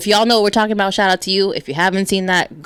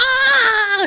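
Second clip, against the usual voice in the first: acted, very high-pitched, long drawn-out shriek. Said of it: "She gets all loud, starts screaming".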